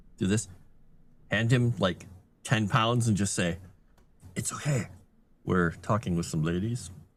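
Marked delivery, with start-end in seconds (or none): 4.4-6.9 discreet, low, hushed half-whisper close to the ear. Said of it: "whisper and come over to the guy".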